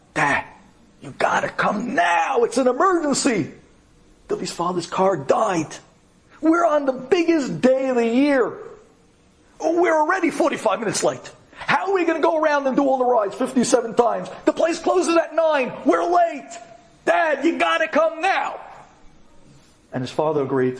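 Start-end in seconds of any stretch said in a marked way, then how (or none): 0.2-18.6 high, urgent pleading voice. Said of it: "this guy tells his father".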